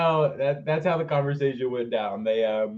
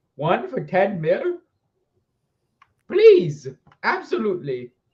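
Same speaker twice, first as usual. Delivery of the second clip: put-on swooping, sing-song old man voice with Italian accent; 6 semitones higher, 6 dB louder than usual. Retelling John Williams accepting a film offer, John Williams as Italian old man. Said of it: "it went from like an old man to an Italian old man".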